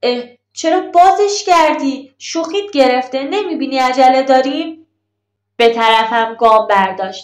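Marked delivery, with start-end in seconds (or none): 0.0-4.9 caught-off-guard, amazed, startled exclamation. Reading a story, the narrator asks why the tie was undone: surprised. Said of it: "با تعجب گفتم".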